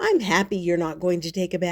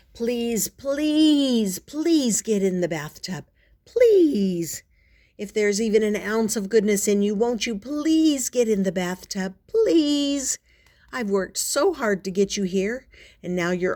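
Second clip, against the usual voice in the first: earnest, insistent, pleading tone; 3 semitones higher than usual. Reading a book aloud, pleading with a cat to get in the bath: begging. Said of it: "try begging".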